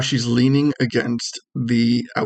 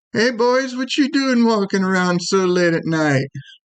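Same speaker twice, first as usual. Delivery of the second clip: put-on female voice, pitched higher; 8 semitones higher than usual. Voicing a stranger calling out to the players: female voice calling out. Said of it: "this female voice calls out to you".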